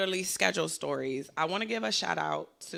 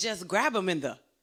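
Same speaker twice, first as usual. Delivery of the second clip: ordinary talk, nothing marked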